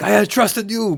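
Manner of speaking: put-on terrible Japanese accent, high-pitched, loud, belted. Joking that Miyamoto kicks down the door, terrible Miyamoto accent impression. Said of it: "Terrible, terrible accent".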